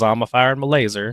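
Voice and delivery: normal talking voice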